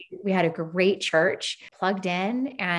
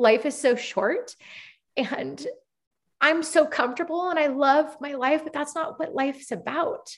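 tearful, pitched-up voice near crying; 8 semitones higher than usual. Telling how their heart changed after devastating news, speaking while crying. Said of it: "Sorry, I'm going to cry".

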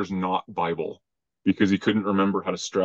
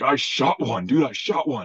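mock over-the-moon excitement, high, drawn-out blurt; 6 semitones higher than usual. Retelling what the game warden said after shooting an elk: imitating someone excited. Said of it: "wide-eyed, excited".

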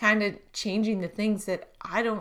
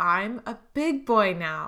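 put-on big, excited voice, drawn out. Retelling what the child said after throwing away his bottles: imitating a big excited voice. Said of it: "he said with this big, excited voice".

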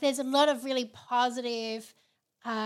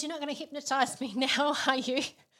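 mock alarmed, spooked, freaked-out panic; 2 semitones higher than usual. Retelling how one guy at an event reacted: imitating a man freaking out. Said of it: "one guy just started freaking out".

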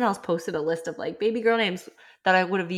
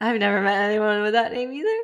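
words coming through laughter; 3 semitones higher than usual. Reading out a list of suggested names, laughing while speaking. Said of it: "I'm laughing because it's like so fun".

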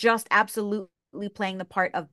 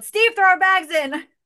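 shrill, very loud, high-pitched yell; 11 semitones higher, 8 dB louder than usual. Retelling rolling down a car window to a stranger: imitating own past yell. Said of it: "and I yelled".

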